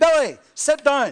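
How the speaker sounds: high, shrill, very loud booming shout. Retelling a joke about a mother ordering her boy: imitating a mother shouting. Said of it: "She shouted".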